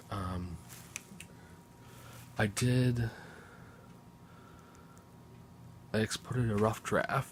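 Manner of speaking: voiced stage whisper. Early-morning video update to a filmmaking group, half-whispering. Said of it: "I'm whispering because it's five thirty-seven a m".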